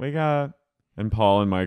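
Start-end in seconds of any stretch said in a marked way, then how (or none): 0.0-0.6 put-on high, blackout-drunk party voice. Retelling how Snooki greets the others: imitating Snooki's blackout drunk voice. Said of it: "her voice when she's blackout is so funny".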